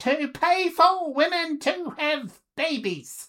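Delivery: mocking, very high, loud fake female voice. Criticizing divorce courts, put-on female voice. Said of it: "in female voice".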